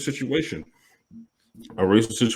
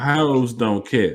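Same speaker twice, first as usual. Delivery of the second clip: "hoes" drawn out slowly. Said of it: "you gotta say it like that".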